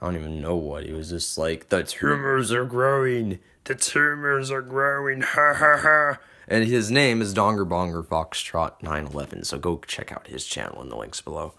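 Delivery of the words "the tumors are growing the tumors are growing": the worst, unclear, pitched-up voice. Retelling a kid's impression from minutes ago, worst impression of someone. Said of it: "some kid did like the worst impression of".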